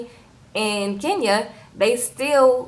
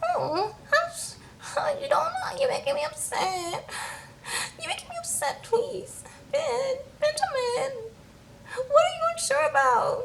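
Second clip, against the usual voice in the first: put-on soft, cooing little baby-talk voice; 8 dB quieter than usual. Recounting what Kingy said to Ben: imitating Kingy's little baby voice. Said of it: "starts talking in this little baby voice".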